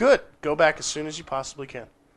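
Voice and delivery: ordinary talk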